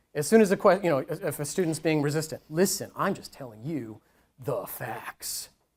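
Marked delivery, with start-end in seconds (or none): 2.5-5.5 very hushed, low, slow, weird gravelly buzz. A speaker demonstrating a tone to avoid with a resistant student, buzzy gravelly voice. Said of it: "I hope you're hearing buzziness now".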